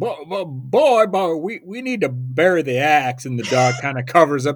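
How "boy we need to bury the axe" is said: cartoon rooster voice, higher, louder and slower. Retelling a favorite cartoon scene where he talks to the dog, Foghorn Leghorn impression. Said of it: "my favorite all time of Foghorn Leghorn is where he goes".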